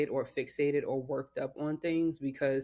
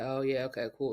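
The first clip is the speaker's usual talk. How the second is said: breezy, casual, can't-be-bothered, nonchalant offhand tone. Retelling own typical replies to family: imitating own nonchalant reply. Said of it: "nonchalant sometimes, just like".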